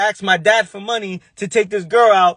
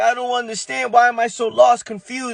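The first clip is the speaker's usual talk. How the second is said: sobbing, tearful, crying through the words; 4 semitones higher than usual. Retelling being lost at eighteen in his parents' house: imitating own past crying. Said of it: "Crying like".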